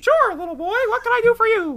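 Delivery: high squeaky voice, loud and bouncy. Asked a question meant for the real Mickey, answering: Mickey Mouse voice. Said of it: "Mickey Mouse".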